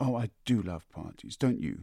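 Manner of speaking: gasping, said on a sharp intake. Laura hugs her brother Laurie and asks him, gasped. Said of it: "Gasped Laura".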